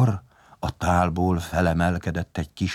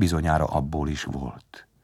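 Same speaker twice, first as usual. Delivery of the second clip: usual speaking voice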